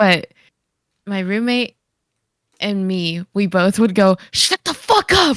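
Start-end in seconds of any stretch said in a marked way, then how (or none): 4.3-5.4 put-on whisper-shout, higher. Retelling hushing a loud moviegoer with a roommate: imitating a whisper-yell. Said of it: "Whisper yelled it".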